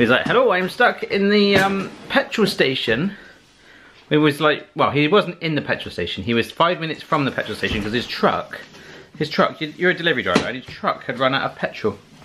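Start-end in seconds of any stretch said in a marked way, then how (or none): 0.3-3.1 bad fake Italian accent, pitched up. Quoting the delivery driver's message, in a bad Italian accent. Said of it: "That's not a very good Italian accent".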